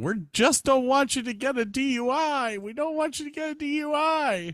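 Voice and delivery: mock, shrill, repeated, very high-pitched scream. Retelling a manager pleading with a drunk man: imitating someone screaming.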